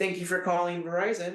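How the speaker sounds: over-the-top cheerful service voice. Speaker showing the kind of phone greeting to avoid, in an extremely positive customer-service voice. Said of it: "that extremely positive customer service voice".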